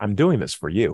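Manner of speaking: mock self-assured, low, smug delivery. Retelling what a father said while nailing his son to a stake, mock-smug and confident. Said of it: "very confidently, very smugly".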